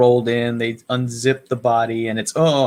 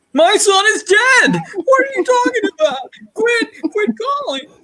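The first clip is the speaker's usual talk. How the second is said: mock crazed, frantic outburst, higher; 4 dB louder than usual. Retelling a show scene as a caller angers a man: imitating a man going crazy. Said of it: "You had to say it like how he did".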